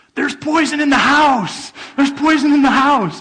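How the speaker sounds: shrill, very high, very loud screaming. Retelling how an elderly mother screamed in the front yard: retelling a mother's screaming. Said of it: "she's now in the front yard screaming".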